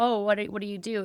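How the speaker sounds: plain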